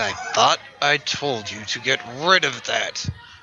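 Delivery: tense words pushed through clenched, gritted teeth. Victoria glares at Raven after hearing about the fish, speaking through gritted teeth. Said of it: "just through gritted teeth".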